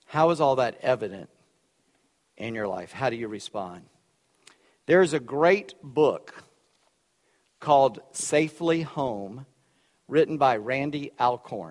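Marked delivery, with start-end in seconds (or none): 4.9-11.7 slow, distinct, carefully enunciated words. Naming a book title so listeners can write it down: slowly and distinctly. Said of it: "I'm saying it slowly and distinctly".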